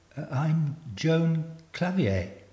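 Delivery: tentative, hesitant. Introducing herself to a woman who has just greeted her, speaking hesitantly. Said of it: "I said hesitantly".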